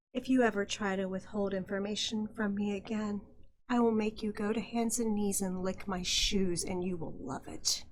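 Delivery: whispering in a menacing tone. Dancing with Waylon in a role-play scene, whispering a threat in his ear. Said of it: "I'm going to whisper in his ear".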